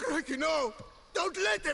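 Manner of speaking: high, loud, panicked screaming.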